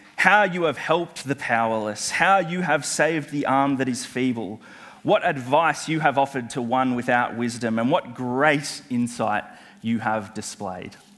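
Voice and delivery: ordinary delivery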